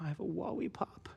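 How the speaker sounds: put-on very quiet shy child voice. Retelling Nova asking the waitress for a lollipop: imitating Nova speaking very quietly. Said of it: "Nova looks up just very quietly and she's like".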